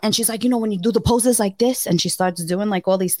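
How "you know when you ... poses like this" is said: put-on strong Spanish accent, laid on thick. Retelling a talk with a woman, the speaker quotes her in a heavy thick Spanish accent. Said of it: "she has this heavy thick spanish accent".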